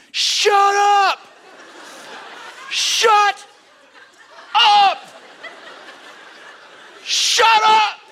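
mock very high, slow, repeated drawn-out scream. Retelling a moment of losing patience with a screaming baby: imitating own past screaming. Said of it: "I am screaming at him".

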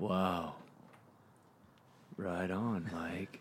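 very quiet, very slow, deep monotone jock voice. Imitating a retired football player co-host: imitating a deep football player voice. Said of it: "Like that deep football player voice".

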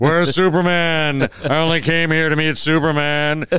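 loud, hammy, booming put-on announcer-style voiceover voice. Imitating how the voiceover actor in a cartoon sounds: imitating Ted Knight as Starman. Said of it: "is talking like this".

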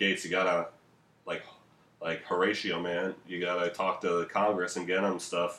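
plain

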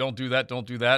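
ordinary talk

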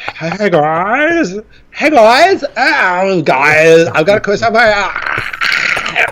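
each "hey, guys" stretched out long. Reading out a new listener's email in a new voice: Bobcat Goldthwait voice. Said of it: "a little bit too Bobcat Goldthwait there".

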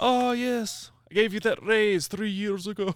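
bad, very high, slow cartoon voice. Doing the accent after being asked to: bad Scrooge McDuck accent. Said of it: "I can't do it very good".

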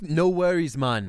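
put-on Jamaican accent. Greeting friends after coming back from a trip, in a put-on Jamaican accent. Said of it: "I brought Jamaica back with".

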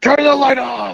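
mock, very high, rough, ragged shrieking. Retelling what he screamed when the speaker flipped the light on: retelling a scream. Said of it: "he screams at me".

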